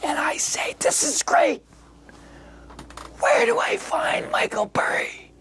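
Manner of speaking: low, hushed, secretive whisper. Retelling own reply to her: imitating own past whisper. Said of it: "So I start talking in a whisper".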